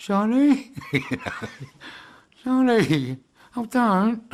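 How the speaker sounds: very high, very slow South London gangster voice. Speaker retells calling out someone's name from a window: south london gangster voice. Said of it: "in my best South London gangster voice".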